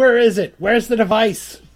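insistent, pressing tone. Voicing Guy grabbing Gozag and asking for the device: Guy demanding. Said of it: "he grabs Gozag and he goes".

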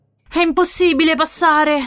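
frightened voice. Reading a story, a character facing a blocked rocky road speaks in a frightened voice. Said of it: "con la voce impaurita".

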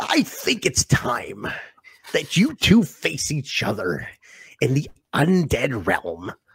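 breathy, whispery put-on character voice. Asked to do the voice about an Undead Realm match: put-on character voice. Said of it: "you got to do the voice".

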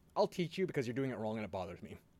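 ordinary delivery

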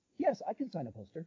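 soft, peculiar, odd, strange-sounding delivery. Retelling a man's reply when asked to sign your poster, strange-sounding imitation. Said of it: "just the way he said it was so strange".

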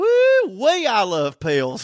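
high, slow, laughing whoop.

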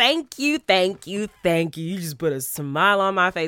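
words spoken with an audible smile. Thanking listeners after reading their reviews aloud, smiling while talking. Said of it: "Can you tell that I'm smiling while I'm talking".

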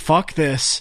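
plain

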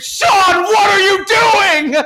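shrill, high, loud, drawn-out scream. Retelling how Dad reacted on a curving freeway ramp: imitating Dad screaming. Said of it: "and screamed".

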